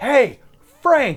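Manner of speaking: high, loud jeering call-out. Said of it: "he's like".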